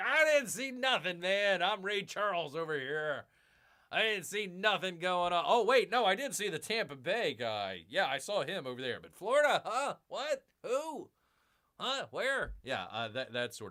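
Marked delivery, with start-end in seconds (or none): 0.0-12.5 feigned oblivious, clueless delivery, voice nudged slightly up. Acting out a referee who claims he saw nothing: imitating oblivious refs. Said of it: "That's gonna be my impression".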